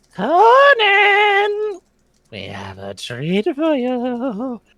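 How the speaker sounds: very high, very slow, swooping, drawn-out witch voice. Describing a voice heard from the forest, the speaker does a witchy voice. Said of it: "the same sort of like witchy voice".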